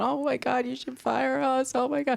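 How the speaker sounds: mock sobbing, high, tearful crying voice. Retelling two employees apologizing after a mistake: imitating someone crying. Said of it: "they're standing there crying, going".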